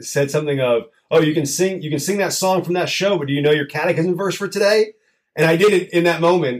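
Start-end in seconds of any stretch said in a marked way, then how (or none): 1.2-4.9 put-on snarky voice, higher. Recalling a childhood moment, quoting the father, imitating his snarky voice. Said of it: "in a snarky voice".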